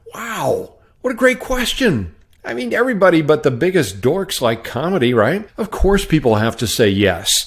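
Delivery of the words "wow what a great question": high, gushing mock-amazed voice. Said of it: "And I thought".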